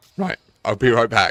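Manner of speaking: very loud voice, breaking and cracking. Excusing yourself from the conversation for a moment, voice cracking. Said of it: "that made my voice crack".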